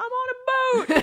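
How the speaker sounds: put-on very high, shrill, full-throated shriek. Speaker recalls playing a game at age four, retelling a childhood scream. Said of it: "I would scream".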